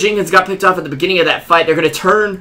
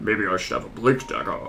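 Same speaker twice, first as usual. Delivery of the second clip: very deep, hushed, quiet hero voice; 9 semitones lower, 11 dB quieter than usual. Retrying a line after calling the first try too high, in Earthshaker voice. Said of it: "Let me try that again".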